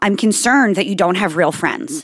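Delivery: normal talking voice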